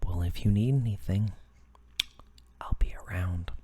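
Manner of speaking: weird somber voice, very loud, low and booming. Act out the man who offered help while you were looking at a laptop, imitating a weird, somber voice. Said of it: "weird, somber voice behind you is just like".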